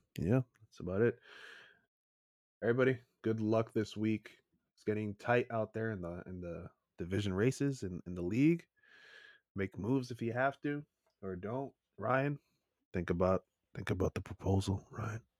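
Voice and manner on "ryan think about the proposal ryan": low, convincing, persuasive, coaxing voice. Signing off, the host urges the other speaker to think about the proposal, low convincing voice. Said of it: "that low convincing voice".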